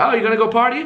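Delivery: put-on eighty-year-old woman's voice. Retelling a chat with the elderly landlady, voicing her reply: imitating an eighty-year-old woman. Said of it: "She's like some eighty year old old woman".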